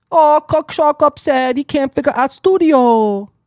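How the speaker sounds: very high-pitched put-on Chinese accent. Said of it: "Why did I do that in a Chinese voice?".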